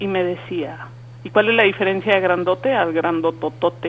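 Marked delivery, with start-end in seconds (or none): none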